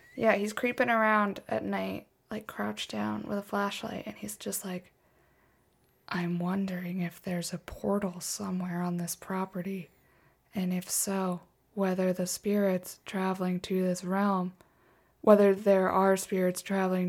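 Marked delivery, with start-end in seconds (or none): 6.1-17.1 put-on flat male monotone delivery. Describing a man creeping around at night in a clip, imitating him in a monotone. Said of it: "he talks in a monotone".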